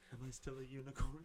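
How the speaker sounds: high, heartfelt, earnest, lifted voice. Retelling a film actor's line after he crouched: imitating Pedro Pascal. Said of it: "Just imagine Pedro Pascal going".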